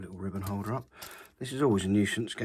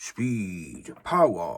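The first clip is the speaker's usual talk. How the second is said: bad put-on voice, loud with big swooping pitch; 2 semitones lower, 5 dB louder than usual. Testing a camera while setting up: worst Jeremy Clarkson impression. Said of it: "my worst Jeremy Clarkson impression".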